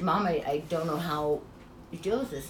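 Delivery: plain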